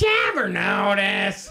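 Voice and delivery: high, cartoonish cartoon character voice. Joking about a segment, doing a Beavis voice: Beavis voice. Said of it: "I'm doing a Beavis voice here".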